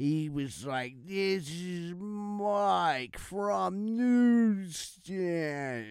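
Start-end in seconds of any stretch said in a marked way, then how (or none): 1.1-5.7 very slow, drawn-out slow-motion speech. Retelling how a caller sounded on the phone, imitating Mike's slow-motion talk. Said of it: "he was talking in slow motion".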